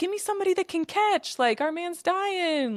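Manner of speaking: very high, frantic, freaked-out crying out. Speaker retells a very freaked-out man calling to his team for help, mock crying out. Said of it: "Like crying out to these".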